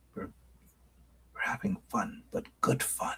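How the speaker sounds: very soft, hushed, breathy whisper. Speaker asking a crowd to come closer, then whispering. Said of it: "I'm whispering".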